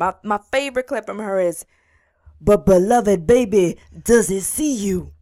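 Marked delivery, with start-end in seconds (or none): 2.4-5.0 real deep, loud, slow, drawn-out voice. Quoting a favorite clip of Iyanla: imitating Iyanla, real deep. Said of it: "She got that, like, real deep".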